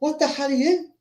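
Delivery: very high, soft, hushed, worried tone. Retelling a scene, Johnny Cage questions a glowing Raiden: Johnny Cage, mock-worried. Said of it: "now got like a concern on his face".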